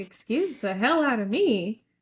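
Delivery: mock stunned, shocked man's voice. Retelling a movie scene, a character's reply: imitating a stunned man. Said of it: "he was stunned".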